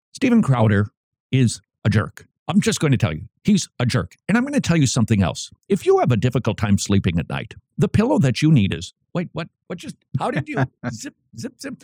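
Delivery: fast-talking put-on pundit voice, ad-read style. Giving an impersonation after being asked to: Ben Shapiro impersonation. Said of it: "do your best Ben Shapiro impersonation".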